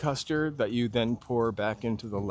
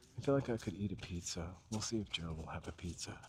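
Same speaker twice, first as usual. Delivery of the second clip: hushed whisper, quieter and faster; 4 semitones lower, 12 dB quieter than usual. The speaker whispers because someone is right behind them on the phone, whispering. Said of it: "I'm whispering because he's behind me".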